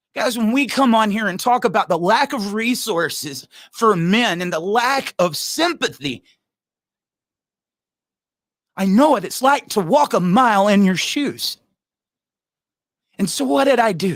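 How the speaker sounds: worked up, earnest, a little heated and emotional. Addressing the other guys after hearing their stories, a little heated. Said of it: "I get a little heated".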